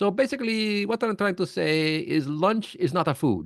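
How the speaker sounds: put-on heavy, thick Indian accent, very high pitch. Retelling a gentleman's stories, the speaker does his thick indian accent. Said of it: "he had a real thick accent. I'm going to try to, to do his imitation".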